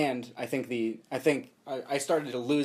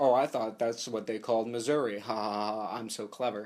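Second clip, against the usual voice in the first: put-on smug, educated, self-satisfied voice. Retelling a film character's joke about Missouri: imitating a smug, educated character. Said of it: "educated, he sounds, it sounds like the director's voice".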